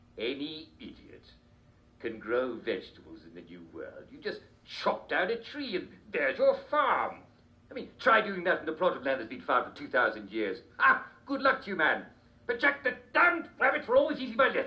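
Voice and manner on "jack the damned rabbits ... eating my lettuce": put-on grumbling king voice, a little upset. Playing King George the Third in a mock interview: playing King George the Third. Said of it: "His Majesty King George the Third".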